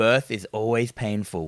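put-on low deadpan. Quoting Herbert West's reply about the cat's noise, deadpan Herbert West impression. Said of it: "The way he delivers that line as well, it's just so deadpan".

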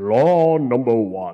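very loud, booming delivery. A speaker announcing the first of three laws of dating, in a God voice. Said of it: "let me put on a better God voice".

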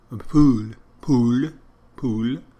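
put-on loud, slow, outrageous French accent, drawn-out pool. Quoting a film detective's line: Inspector Clouseau voice. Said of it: "When he's trying to say pool".

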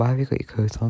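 softly spoken. Speaker retells a question a woman came up and asked them: quiet. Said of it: "quietly went".

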